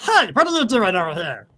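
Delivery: little gnome voice, high and loud. Narrating a gnome who comes over and sees you, in a gnome character voice. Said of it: "Let me see what his voice is going to be".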